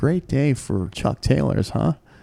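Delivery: soft, pianissimo, sotto voce aside. Retelling a remark to a girl who came into a store: imitating speaking sotto voce. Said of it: "So I lean in sotto voce, pianissimo".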